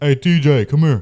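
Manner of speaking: very loud, high, brash hollered call. Retelling a kid of at least twelve calling out: very deep voice. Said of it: "deep ass voice".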